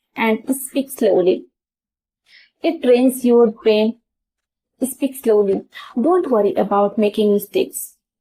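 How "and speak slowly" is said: ordinary talk, nothing marked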